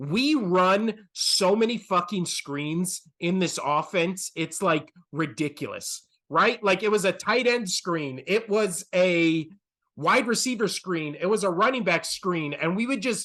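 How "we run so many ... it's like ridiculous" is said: plain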